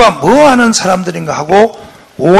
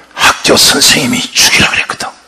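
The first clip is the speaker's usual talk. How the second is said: put-on ghostly voice, pitched much lower; 5 semitones lower than usual. Retelling someone's answer about who told them to say it: imitating a ghost-like voice. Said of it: "목소리를 꼭 귀신같이 내고 있어".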